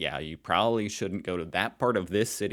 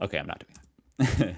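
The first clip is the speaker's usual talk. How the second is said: ordinary talk, nothing marked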